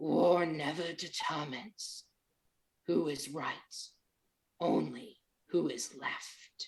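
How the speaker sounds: mournful, low, gravelly stone-statue voice. Narrating a weeping stone statue that comes to life and speaks, sad and gravelly. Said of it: "the statue says in a sad, gravelly voice".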